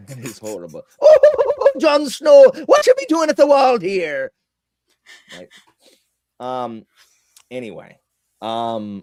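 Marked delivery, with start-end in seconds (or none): 1.0-4.3 awful put-on leprechaun voice, shrill and loud. Doing the bit again, the speaker addresses Jon Snow in a horrible leprechaun voice. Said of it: "That's horrible".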